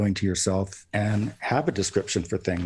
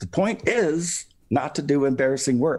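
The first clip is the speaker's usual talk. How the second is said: loud, high, full-force yell; 6 semitones higher than usual. Recounting a man who spun around and yelled at the speaker, retelling a loud yell. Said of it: "in a very kind of loud voice yelled at me".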